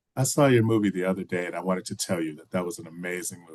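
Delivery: ordinary talk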